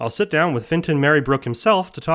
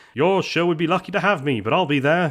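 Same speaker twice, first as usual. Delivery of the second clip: terrible, snide, snarky, deliberately bad put-on voice. Retelling what Finton said a week ago: terrible snarky impression of Finton. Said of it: "That's a terrible impression of me".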